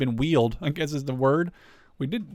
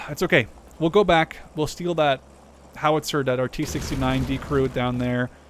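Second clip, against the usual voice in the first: normal talking voice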